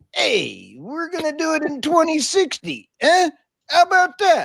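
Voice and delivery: put-on tough mobster voice with swinging, swooping pitch. Acting out China's answer on net zero, do your best Tony Soprano voice. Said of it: "let me do my best, Tony Soprano".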